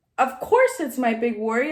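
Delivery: normal talking voice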